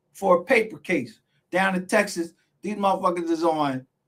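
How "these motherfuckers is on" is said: ordinary talk, nothing marked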